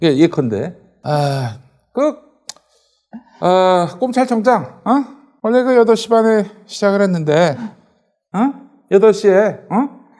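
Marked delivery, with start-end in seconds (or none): 1.0-9.9 put-on pitched-up speech tic, rising tag 어. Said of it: "윤석열 말투 제가 성대모사".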